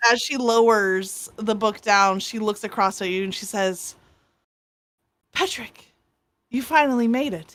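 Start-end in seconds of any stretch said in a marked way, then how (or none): 5.3-7.6 overjoyed, delighted, happy voice. Voicing a character lowering a book to greet someone: so happy to see you. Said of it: "she seems just so happy to see you".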